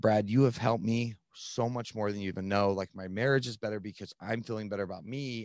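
ordinary delivery

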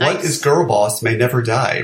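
ordinary talk

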